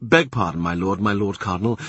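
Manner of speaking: plain reading voice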